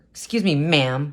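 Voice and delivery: sour, bitter, sarcastic, condescending politeness. Telling listeners about a condescending woman, acting out a mock-bitter tone. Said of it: "really bitter".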